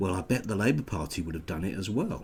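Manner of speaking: ordinary talk, nothing marked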